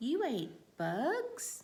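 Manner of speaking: rising tune, bugs drawn out with a lift. Repeating the sentence for listeners to punctuate in the air, rising question tone. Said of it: "That was a question".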